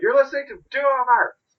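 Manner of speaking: high-pitched, loud, hyped-up shouting. Quoting a recording that keeps repeating its title: imitating Tom Martin shouting. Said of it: "constantly Tom Martin shouting".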